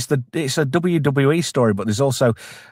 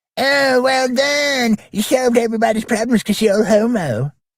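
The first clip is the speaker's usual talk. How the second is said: very high-pitched, squeaky cartoon character voice; 10 semitones higher than usual. Riffing on a Starfleet Academy story, switching into a Cartman voice. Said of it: "I can say this in the vo- in the style of Cartman".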